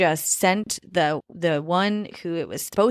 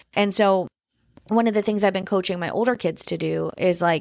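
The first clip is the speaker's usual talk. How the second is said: ordinary talk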